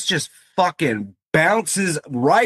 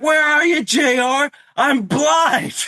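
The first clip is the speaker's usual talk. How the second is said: hollering, pitched-up yell; 9 semitones higher than usual. Retelling a wrestler's entrance, imitating Taz yelling. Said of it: "he's just like".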